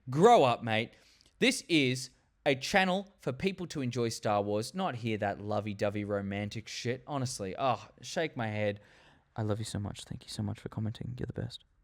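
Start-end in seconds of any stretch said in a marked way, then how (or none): none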